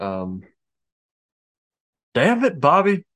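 poorly done cartoon dad voice, pushed up in pitch. Speaker trying out impressions for the others, doing a Hank Hill voice. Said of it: "Hank Hill".

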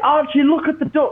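mock drunken yell, very high-pitched. Retelling how a drunk woman at a lake shouted at him, retelling her drunken shout. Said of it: "she just shouts at me".

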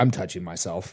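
low, quiet, dead serious deadpan. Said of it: "dead serious".

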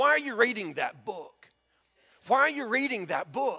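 kinda snarky, needling, challenging tone. Retelling a lady's question to a pastor reading his Bible: imitating a snarky remark. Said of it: "she said it kinda snarky like that".

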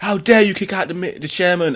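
play-acted high-pitched, indignant, outraged outburst. Retelling a young man's protest at a meeting; retelling someone kicking off. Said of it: "he starts kicking off".

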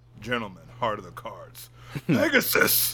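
deep cartoon hero voice with wide swooping pitch. Discussing Yu-Gi-Oh with friends, a speaker imitates the show's voice change, deep Pharaoh voice. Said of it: "he had the deep voice".

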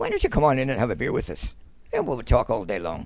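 put-on slight, sing-song southern Irish accent. Speaker imitates how Southern Ireland people talk, with a wee Southern Irish accent. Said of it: "they talk with a wee accent".

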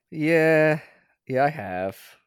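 a little sad. Asked by the host about watching Komi-san, answering a little sad. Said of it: "You sound a little bit sad about this".

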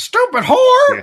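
quacking duck voice. Retelling a story, the speaker voices the duck that cuts in: duck voice. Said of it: "the duck voice comes in and goes".

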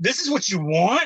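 loud, carrying, high voice. Retelling own words to a friend in a video store: retelling saying it loudly. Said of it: "I said it real loud".

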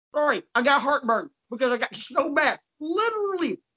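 words mushed around while chewing, mouth full. A show host eats Tums mid-episode and keeps talking: talking while chewing. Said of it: "I'm chewing Tums and talking at the same time".

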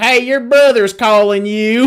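loud put-on Kentucky accent, played for laughs. Retelling what the Kentucky man said after a donkey brayed, imitating a man's Kentucky accent. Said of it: "dude, the best accent".

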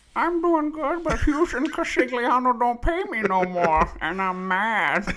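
very high comic voice. Asked how he's doing by his podcast co-host, answering in a Billy Crystal impression. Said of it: "Is that a Billy Crystal voice?".

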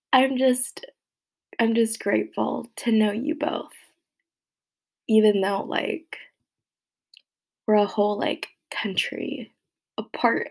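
emotional voice, tearing up. Speaker on a birthday podcast thanking two friends, getting emotional. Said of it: "why am I getting emotional?".

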